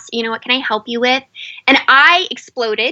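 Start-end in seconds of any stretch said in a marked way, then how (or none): 0.1-1.2 sweet tone, spoken faster. Retelling a man coming into the kitchen offering help, retelling a sweet question. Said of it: "he just very sweetly asked".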